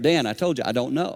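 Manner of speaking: put-on, very stern, firm, no-nonsense delivery. Retelling a coach's answer to a repeated question: imitating a stern reply. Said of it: "He said it very stern".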